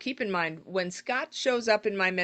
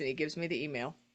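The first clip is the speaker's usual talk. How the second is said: ordinary delivery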